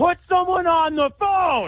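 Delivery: yelling. A caller argues with an automated phone system, demanding a person, yelling. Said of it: "You've been yelling this entire conversation".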